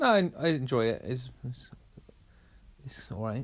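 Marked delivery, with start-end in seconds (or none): 1.0-3.4 flat, unenthusiastic tone. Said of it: "I can hear the enthusiasm in your voice".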